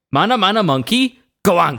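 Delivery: put-on Welsh accent. Asked by another speaker to repeat a made-up insult in their best Welsh accent. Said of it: "can you do it in your best welsh accent".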